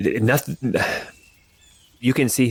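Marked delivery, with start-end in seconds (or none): 0.0-0.7 stuttering slightly, a little stammer. Voicing a character who answers a pointed question: stammering a little. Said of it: "he's kind of stammering a little bit".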